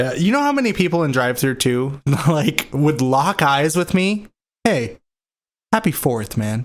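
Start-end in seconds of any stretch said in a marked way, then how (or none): 4.6-6.7 mock overly dramatic, intense, low voice. Retelling drive-thru customers locking eyes with the speaker, mock dramatic and intense. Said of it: "all dramatic and intense".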